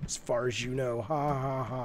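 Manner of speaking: terrible scary voice, very soft, low and hushed. A host urging a listener to call in, in a terrible scary voice. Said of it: "That was a terrible, scary voice".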